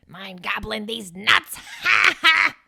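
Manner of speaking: slow impression, taunting tone, breaking into a cackle. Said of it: "That's my best Willem Dafoe impression".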